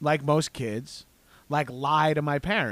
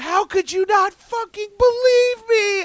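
put-on very high-pitched, shrill, loud childish screaming; 6 dB louder than usual. Recalling lying as a child and screaming at their parents: re-enacting screaming at parents. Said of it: "I'm screaming at my parents".

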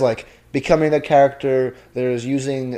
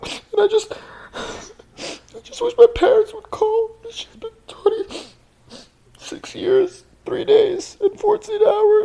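fake crying, much higher pitch. Teased about being a crier, playing it up with mock crying. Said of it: "I think I'm actually crying".

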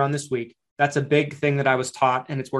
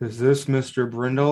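put-on miserable-sounding voice. Imitating a cold caller greeting a customer: imitating a miserable-sounding caller. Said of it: "you sound miserable".

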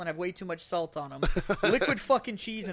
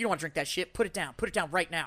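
put-on sassy woman voice; 3 semitones lower than usual. Retelling a night out, quoting a lady at a bar: imitating a sassy lady.

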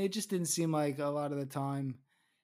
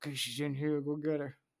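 ordinary delivery

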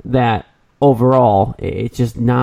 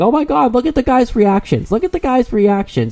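very high, screaming excitement; 12 semitones higher than usual. Mocking how she sounded during the Home Run Derby, imitating a woman screaming. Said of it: "you sound like a little high school girl going".

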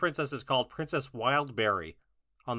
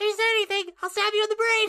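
put-on high, loud little-kid voice; 7 dB louder than usual. Redoing an impression of her line after being asked, in a child voice. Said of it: "I have to do a child voice".

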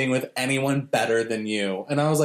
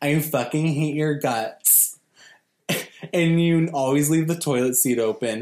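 ordinary talk, nothing marked

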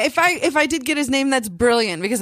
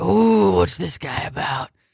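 put-on dog voice, lower; 5 semitones lower than usual. Retelling what her dog seemed to think on a walk: voicing her dog. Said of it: "So she's just like".

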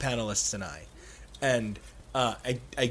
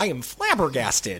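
put-on character voice, indignant, upset, flabbergasted. Retelling how someone got upset during an interview: Joey impression, mock-flabbergasted. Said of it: "That was a really good Joey impression".

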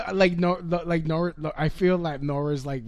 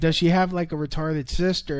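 ordinary talk, nothing marked

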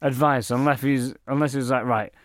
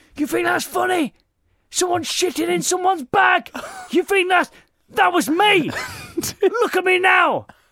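shrill, very high-pitched shouting breakdown; 4 dB louder than usual. Retelling how a man broke and yelled at a laughing crowd, imitating someone shouting. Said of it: "he just started shouting at everyone".

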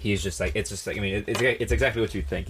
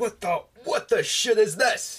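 yelling in anger, pitched higher; 12 semitones higher than usual. Retelling a TikTok where Gordon Ramsay screams at a counter worker: imitating Gordon Ramsay screaming. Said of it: "screaming at the guy behind the counter".

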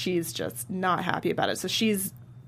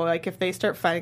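ordinary talk

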